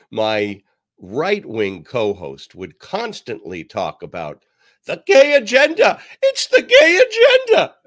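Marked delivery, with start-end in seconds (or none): 4.8-7.6 hysterical, very high-pitched, shrill voice. Imitating a former right-wing radio co-host: imitating a high-pitched voice. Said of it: "he had a high-pitched voice like that".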